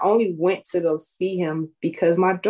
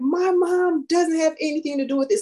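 mock very high-pitched, shrill yelling outburst; 10 semitones higher than usual. Retelling a daughter yelling at her father on a call: imitating a daughter yelling. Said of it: "listening to her yelling at him".

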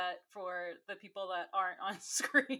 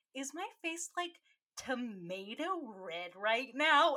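put-on angry voice, sweet on top, seething; 4 semitones higher than usual. Retelling a girl's line after she got no rose: imitating Kit, smiling while fuming. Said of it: "And that's how she says it".

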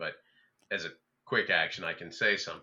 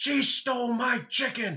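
shrill, high, drawn-out, top-of-the-lungs yell; 5 dB louder than usual. Running out after a thief in a game, in-character shout. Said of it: "I'll shout at the top of my lungs".

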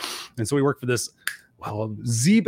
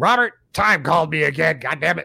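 put-on loud, irritated, annoyed grandmother voice; 4 semitones higher, 5 dB louder than usual. Coming home after prank calls, the speaker voices his friend's grandmother, imitating her. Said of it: "I could still do the voice".

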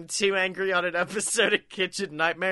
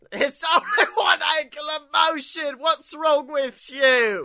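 angry put-on chef voice, higher pitched; 8 semitones higher, 4 dB louder than usual. Acting out a celebrity chef yelling at gym regulars: Gordon Ramsay impression. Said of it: "none of these accents are Gordon Ramsay".

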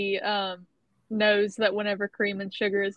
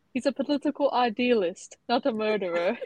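put-on British accent; 3 semitones higher than usual. Chatting with others, giving an opinion about a character in a British accent. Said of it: "all I can say in a British accent is".

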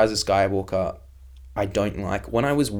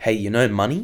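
plain

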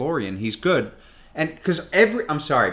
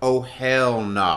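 put-on sudden blurted exclamation, spoken aloud. Recalling seeing the child in handcuffs on the show, retelling an exclamation out loud. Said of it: "I literally exclaimed out loud".

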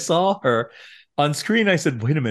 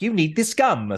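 put-on British accent, higher pitch; 6 semitones higher than usual. Retelling a gum commercial line in a british accent. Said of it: "British accent".

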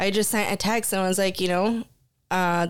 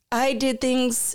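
high voice, convincing fake crying through the words; 5 semitones higher than usual. Retelling calling a man back who was crying, imitating someone crying. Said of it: "That was the best fake cry I've ever heard".

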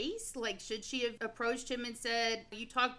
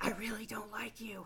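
put-on, mock-whispering voice; 5 dB quieter than usual. Describing housemates who whisper their dislike, imitating a whisper. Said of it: "they're whispering".

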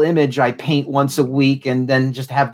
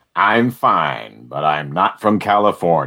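very deep, very low, slow, drawn-out voice; 10 semitones lower than usual. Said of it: "I gotta shake the Freeman out of me".

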